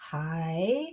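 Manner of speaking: high pitch dipping down then back up. Teaching the third tone, dipping tone on high. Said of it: "Can you hear me go down and up?".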